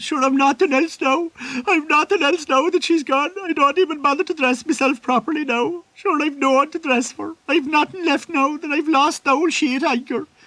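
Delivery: very high-pitched, tearful, pleading crying lament. Retelling what a drunk sailor said while crying: imitating someone crying. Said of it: "the sailor starts crying and saying".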